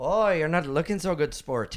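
put-on Irish accent. Role-playing as the guy from a story, in a put-on Irish accent. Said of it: "he's Irish now".

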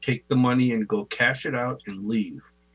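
ordinary talk

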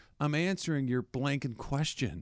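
mock calm soothing tone. Describing a man swearing at a reporter, imitating his calm, soothing tone. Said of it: "talking in a very calm, soothing tone".

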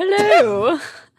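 put-on British accent. Answering after being asked to reply in a british accent: put-on british accent. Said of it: "replying to him in a British accent".

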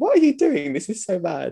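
stunned, disbelieving tone. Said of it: "But I was just like".

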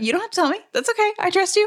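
high, reassuring, not judgmental voice.

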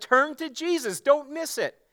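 high, slow, fervent, impassioned pleading tone. Retelling how a man pleaded with his listeners, acting out someone pleading. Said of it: "He's pleading with them".

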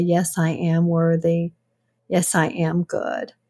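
ordinary talk, nothing marked

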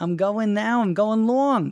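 exaggerated New York accent. Making fun of his wife, exaggerated new york accent imitation. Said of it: "I'm overdoing it a little bit".

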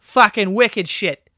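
put-on slow, high, loud Boston accent. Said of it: "jealous of people who have that Boston accent".

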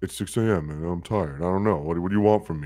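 low, weary, worn-out, tired voice. Retelling what Kevin said when he finally responded at 6 a.m., imitating Kevin's tired voice. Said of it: "your tired voice".

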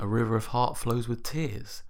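ordinary talk, nothing marked

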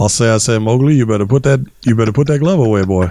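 put-on cartoon rooster voice. Showing what your take on the character sounds like, do a Foghorn Leghorn impression. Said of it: "my impression of Foghorn Leghorn".

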